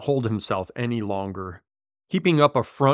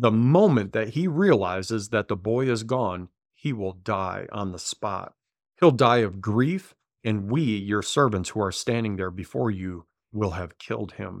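normal talking voice

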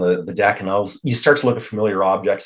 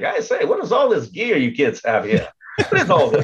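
put-on old-timey mid-Atlantic accent, high and swooping; 7 semitones higher than usual. Casting himself as a guy from the 1940s, the speaker uses an old-timey mid-Atlantic accent. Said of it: "talking like the mid-Atlantic".

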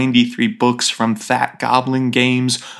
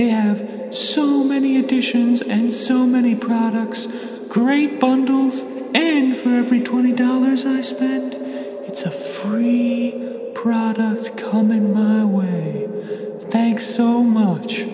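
put-on creepy baby ghost voice, higher; 11 semitones higher than usual. Reading an ad for a gaming store as a super creepy floating baby ghost. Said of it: "here to talk to us about the Open Gaming Store is a super creepy floating baby ghost".

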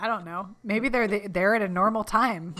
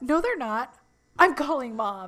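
put-on protesting voice, higher; 3 semitones higher than usual. Retelling a TV scene, the brother protesting: imitating Ross protesting. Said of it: "When he's just like".

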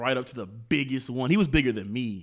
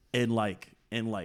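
ordinary talk, nothing marked

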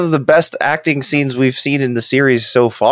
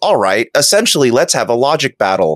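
ordinary talk, nothing marked

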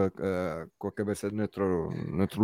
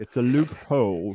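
affected, put-on British English accent; 3 semitones higher than usual. Joking about the word loophole after a viewer comment: put-on british accent. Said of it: "I'm so sorry about my British accent".

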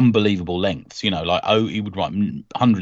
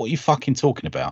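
sudden, blunt, fired-back delivery; 4 semitones higher, 3 dB quieter than usual. Retelling an actor's reply to a fan at a convention: Jon Pertwee impression. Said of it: "John Pertwee's impression there".

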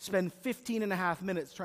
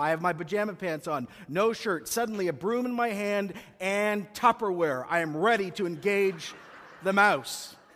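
normal talking voice

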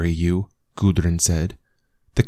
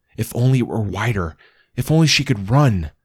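usual speaking voice

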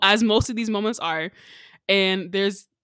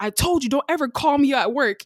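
mock furious yelling, a high, angry scream; 5 semitones higher, 3 dB louder than usual. Retelling how a man yelled at a caller on his phone: retelling a scream at a caller. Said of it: "he starts screaming at his phone".

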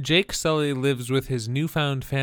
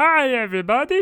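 loud, very high calling out; 12 semitones higher, 6 dB louder than usual. Greeting everybody after being introduced as Doctor Nick, in the Doctor Nick voice. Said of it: "I can only do the Doctor Nick voice from The Simpsons".

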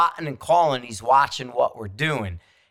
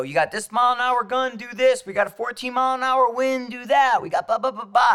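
high, yelled calls, acted out; 10 semitones higher than usual. Retelling calling out wind calls at the range: retelling own yelling. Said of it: "And I'm yelling".

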